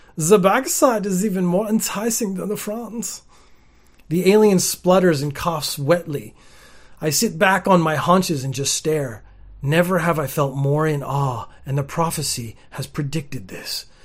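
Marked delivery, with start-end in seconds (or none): 0.2-3.3 heavy fake German accent, pitched up. Reading a story aloud, voicing a character's line in a fake German accent. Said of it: "I immediately go German".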